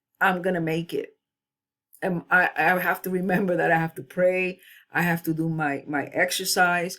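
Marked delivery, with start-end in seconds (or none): none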